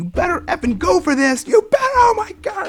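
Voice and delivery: mock very high, shrill, rising screaming. Retelling watching the game with masked friends before third down; retelling screaming at the TV. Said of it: "I'm just like screaming".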